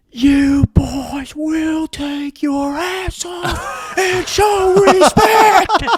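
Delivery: very loud, very high, very slow drawn-out yell. Retelling how the assistant coach interrupted a team prayer: imitating a yell. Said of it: "the assistant coach immediately starts yelling".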